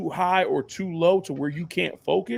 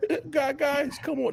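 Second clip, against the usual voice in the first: put-on high, squeaky cracking teenage voice, stumbling; 8 semitones higher than usual. Imitating a young quarterback talking to veterans: imitating a voice cracking with puberty. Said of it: "a puberty moment where he like".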